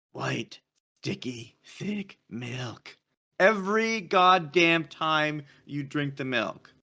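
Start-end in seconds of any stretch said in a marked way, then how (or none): 0.1-2.9 dark, brooding superhero voice. Quoting what another person says; Batman voice. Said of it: "He says in a Batman voice".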